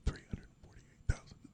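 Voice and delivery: soft, hushed whisper. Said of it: "they don't say those prices out loud".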